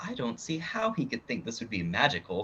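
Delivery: hushed, soft half-whisper. Inspecting a bow on the bar, half-whispering as he walks up. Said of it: "I'm just gonna kinda whisper".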